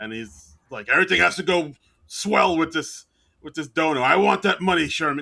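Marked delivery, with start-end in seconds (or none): 0.9-5.2 barked yelling at full blast. Retelling what the dean tells Sherman about the donor: imitating the dean as Spacely Sprockets. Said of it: "very Spacely Sprockets".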